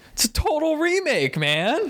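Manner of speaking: slow, swooping, high, stretched-out voice. Retelling an interview where Jeff Bridges answers: Jeff Bridges impression. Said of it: "That was a good Jeff Bridges".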